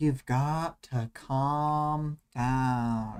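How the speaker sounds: mock-calm meditative voice. Imagining how a character would talk to an angry Lisa, mock-calm meditative voice. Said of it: "like a calming, meditative version".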